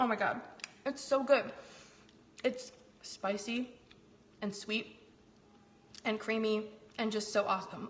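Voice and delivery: speech muffled by full mouth. Tasting cookies with pumpkin butter for viewers, talking with mouth full. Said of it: "I'm gonna eat with my mouth full".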